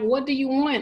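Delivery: acted, reined-in tearful yelling outburst. Recounting crying alone in a park, retelling her own yell. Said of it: "Like I yelled at him".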